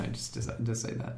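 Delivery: soft whispered aside.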